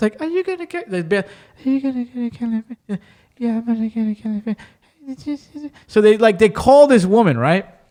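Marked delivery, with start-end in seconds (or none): 0.2-4.6 put-on voice sounding eighty feet away, quieter. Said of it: "they sound like they're eighty feet away".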